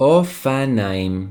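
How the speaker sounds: ofanaim sounded out and drawn out slowly. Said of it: "Now say it with me".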